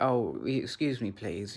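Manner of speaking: put-on very feminine, affectionate manner. Retelling own words to two girls, imitating a very feminine, affectionate manner. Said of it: "in a very feminine way".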